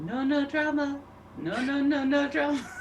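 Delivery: quiet, hushed mutter under the breath. A player voices her character muttering under her breath. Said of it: "she is under her breath going".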